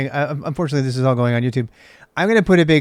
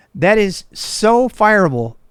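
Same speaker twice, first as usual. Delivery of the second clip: worked-up outrage, high, very slow and drawn out; 7 semitones higher than usual. Ranting about passwords in command-line arguments: getting worked up. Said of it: "I'm getting kinda spun up about that".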